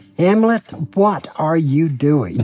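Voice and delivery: ordinary delivery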